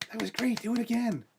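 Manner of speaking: high, squeaky, tiny fairy voice. A game master voices a fairy as a player finishes playing, in Pixie's little fairy voice. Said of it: "a little female fairy, Pixie".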